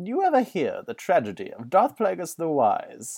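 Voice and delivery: sing-song character voice with broad swooping pitch. Trying again after a voice clip: imitation of Palpatine. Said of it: "imitation of Palpatine".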